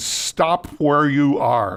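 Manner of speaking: mock resounding voice, only lightly suggested. Retelling a man with a rifle ordering the speaker to stop, booming voice. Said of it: "this booming voice says".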